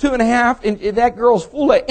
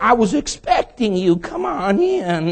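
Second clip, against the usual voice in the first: slow, creaky voice like a creaking door hinge; 3 dB quieter than usual. Retelling how the man behind the door greeted them, creaky hinge-like voice. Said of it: "He sounded like a hinge".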